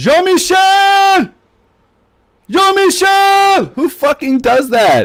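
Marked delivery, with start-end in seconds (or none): 0.0-3.7 acted, very high calling yell. Telling a story about a man at a grocery store door, retelling a yell across a store. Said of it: "And he's yelling".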